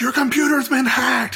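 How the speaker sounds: put-on, shrill, very high screaming. Retelling a coworker screaming that the computer was hacked: imitating a coworker screaming. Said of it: "screaming at me".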